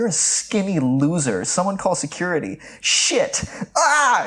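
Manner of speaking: put-on high, swooping, drawn-out scream. Retelling a movie scene where the receptionist turns on a man: imitating someone screaming. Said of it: "she turns on him and screams".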